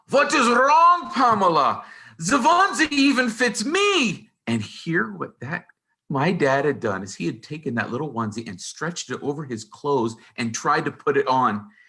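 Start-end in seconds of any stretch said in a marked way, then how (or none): 0.1-4.2 very high, slow, bellowing put-on German accent. Retelling how dad came down the hallway, bellowing in a German accent. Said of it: "in his German accent, bellowing".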